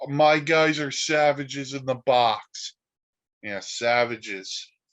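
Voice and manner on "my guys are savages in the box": put-on yelling voice, higher. Mocking the manager in the dugout, imitating Aaron Boone yelling. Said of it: "and yells".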